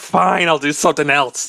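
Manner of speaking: mild, half-shouted in-character yell. Playing a fairy who yells at magic after a refusal: yelling in character. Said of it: "so she just yells to the Wii".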